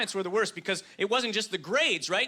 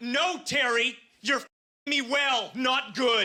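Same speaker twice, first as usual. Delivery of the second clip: put-on cross, mad, annoyed scolding tone; 4 semitones higher than usual. Retelling a girlfriend who corrected grammar, imitating a mad girlfriend. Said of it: "she would get so mad about it".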